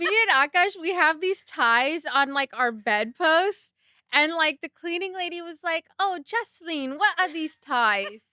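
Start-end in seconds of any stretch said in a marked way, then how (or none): 6.0-8.1 heavy, laid-on, put-on Caribbean accent. Imitating the cleaning lady asking the speaker a question, in a Caribbean accent. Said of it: "Caribbean accent".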